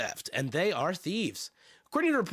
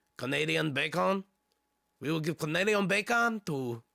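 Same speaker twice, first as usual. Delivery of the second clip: poor, bad put-on French accent. Joking about French-Canadian socialists and Canadian bacon, bad put-on French accent. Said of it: "that's not French. ... My French accent sucks".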